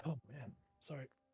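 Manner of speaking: very soft, quiet, half-choked voice. Apologizing to the others while choking a little. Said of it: "I'm just choking a little bit".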